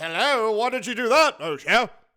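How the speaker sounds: put-on British accent. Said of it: "I don't know why he has a British accent".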